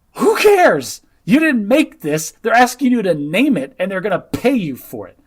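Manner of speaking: loud, high screaming. Retelling a reaction to a scene, imitating own screaming at screen. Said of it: "I'm sitting here screaming at the screen".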